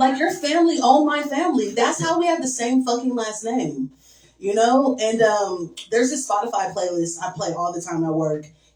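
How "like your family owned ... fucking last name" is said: high, sassy clapback. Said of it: "And I was like".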